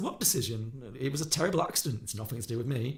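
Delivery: ordinary talk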